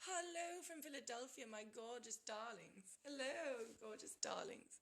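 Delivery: switched-on, put-on English accent. Switching voices to greet the gorgeous darlings, in an English accent. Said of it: "I'm going to work my English accent now".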